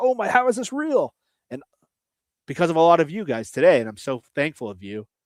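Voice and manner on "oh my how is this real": put-on, very high, excited shouted exclamation. Retelling a player's reaction heard on a mic'd-up clip: imitating Ernest Jones yelling. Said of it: "Ernest Jones yelling".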